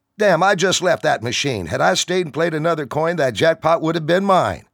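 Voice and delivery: loud, very high-pitched, aggrieved complaining grumble. Upset after a missed jackpot, a man complains to his friend; complaining loudly. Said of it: "complaining loudly to his friend".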